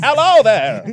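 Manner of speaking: very loud, high, shady sketchy robot voice. Acting out a scene where a pizza man arrives: sketchy robot pizza man voice. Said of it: "a very sketchy robot pizza man is like".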